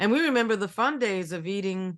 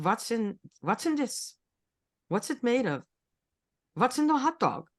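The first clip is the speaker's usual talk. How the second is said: put-on German accent; 2 semitones higher than usual. Speaker retelling a man questioning a hot dog vendor, in a German accent. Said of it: "he had a German accent. He went like".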